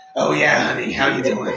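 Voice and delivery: put-on evil villainous New Jersey accent. Voicing the Bridge Troll, the narrator greets the players: corrupted evil Jersey accent. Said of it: "corrupted evil Jersey accent".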